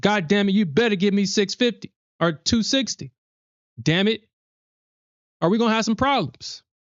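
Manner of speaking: put-on, high, bossy, demanding tone. Showing how to tell her what to do: mock demanding tone. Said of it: "You gotta tell her what to do".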